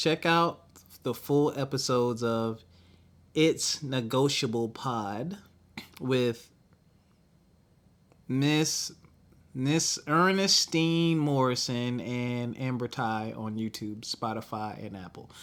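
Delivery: slow, unhurried, deliberate reading aloud. Reading out a shout-out for a podcast's episodes: reading slowly. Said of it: "Sorry I read it slow".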